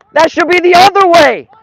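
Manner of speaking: shrill, very loud, high-pitched angry shout. A match commentator yells into the microphone at a refereeing decision, yelling angrily. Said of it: "I'm yelling into the microphone".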